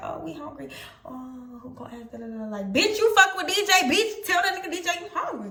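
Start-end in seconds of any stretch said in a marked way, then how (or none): 0.0-2.4 very quiet, hushed, gossipy half-whisper. Retelling how the girls in the back seat asked about food: imitating friends half-whispering. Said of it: "bitches whispering, saying".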